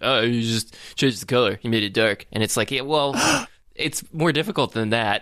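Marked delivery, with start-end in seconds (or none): 0.0-2.3 put-on, unimpressed, dismissive brushing-off voice. Talking about a product feature, quoting what a lot of people would say, put-on voice. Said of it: "You did a voice".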